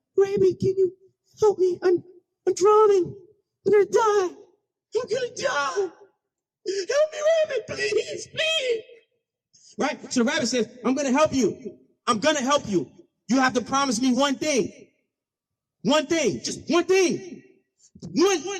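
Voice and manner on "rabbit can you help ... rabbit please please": high, desperate, panicked pleading. Telling the snake-and-rabbit story, voicing the snake: distressed snake pleading. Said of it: "he's under distress".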